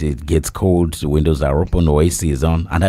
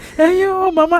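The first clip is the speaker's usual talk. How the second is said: mock crying in a man's voice, higher. Retelling how a mourner cried at a funeral: imitating a man crying. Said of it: "He will cry".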